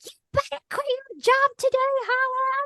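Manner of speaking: shrill, very high yell. Retelling a call to someone in a grocery store: imitating Heather Monahan yelling. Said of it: "yelling at me".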